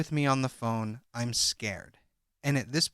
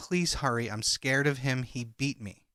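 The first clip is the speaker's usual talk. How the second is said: mock-tearful, crying, pleading voice. Retelling a woman's phone plea to a police officer, imitating a crying plea. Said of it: "she's begging him and crying".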